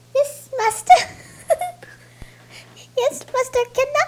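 very high character voice, pushed way up. Answering another speaker who calls out to Dobby: Dobby voice. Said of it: "is that Dobby? Is that the real Dobby?".

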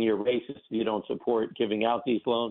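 ordinary delivery

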